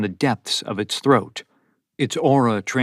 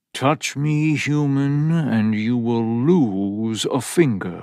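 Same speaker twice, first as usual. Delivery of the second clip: very slow, menacing purr, drawn out. Reading a story, the cat threatens Ethan: deep, menacing purr. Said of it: "It was a deep, menacing purr".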